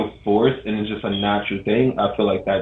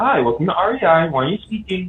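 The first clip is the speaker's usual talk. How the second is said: very high put-on customer service voice; 10 semitones higher than usual. Showing how they talk to customers at work, put-on customer service voice. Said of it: "I put on my customer service voice".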